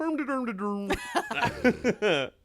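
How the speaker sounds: put-on mock Swedish gibberish voice. Answering a quiz question, recalling the Muppets chef: Swedish Chef voice. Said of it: "the Swedish chef".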